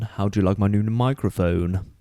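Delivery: very deep, intense voice. Asking the others about a new microphone: very deep voice. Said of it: "that was very deep".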